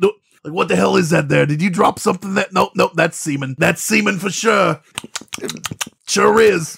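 put-on Boston detective voice. Acting out an officer at a crime scene finding evidence: boston accent. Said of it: "wasn't it in a Boston accent".

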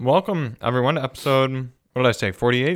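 talking with mouth full, chewing. Welcoming everyone to the podcast episode, chewing while talking. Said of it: "excuse my chewing".

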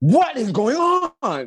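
put-on, very high-pitched, swooping, psychotic crazed yell. Describing a man who burst into rooms, imitate his yell in a psychotic way. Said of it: "it's a real psychotic way".

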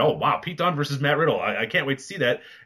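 ordinary talk, nothing marked

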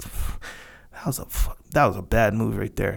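low murmur.

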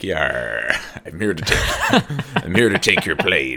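put-on pirate voice. Joking that the hijacker was an air pirate: put-on pirate voice. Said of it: "Air pirate".

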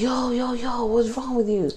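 put-on New Zealand accent. Retelling what a man said to him: attempted New Zealand accent. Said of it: "I don't know how to do a New Zealand accent".

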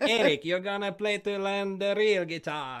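put-on slight Spanish accent, high-pitched and loud. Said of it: "like this little [name] accent".

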